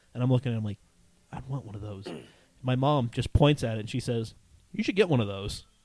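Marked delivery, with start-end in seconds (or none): 4.7-5.6 put-on dry, dead-serious delivery, no joking. Retelling how their mom pointed at a Mustang, imitating mom's deadpan delivery. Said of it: "Just deadpan, like serious".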